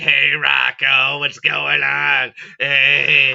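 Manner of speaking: very loud, very slow, rough raspy smoker voice. Describing the cartoon neighbors, imitating Bev flirting with Rocco, Bev Bighead smoker's voice. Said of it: "She has that voice like she smokes cigarettes like every fucking hour".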